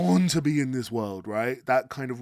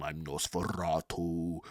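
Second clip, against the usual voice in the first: very low, hushed, deep soft voice, rolled r; 8 semitones lower, 9 dB quieter than usual. Describing a man who always rolled his R's, doing Nosferatu voice with rolled R's. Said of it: "He rolled his R's all the time".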